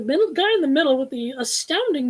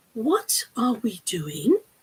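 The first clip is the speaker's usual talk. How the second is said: gentle whispering; 3 semitones lower than usual. Reading a train adventure aloud, the narrator voices a character asking: whispering. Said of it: "Miss Littleton whispered".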